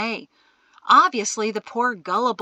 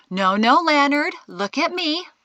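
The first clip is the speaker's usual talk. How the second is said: put-on classroom teacher tone, slightly high; 6 semitones higher than usual. A woman speaks to a man stepping backward, in her best teacher tone. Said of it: "in her best teacher tone".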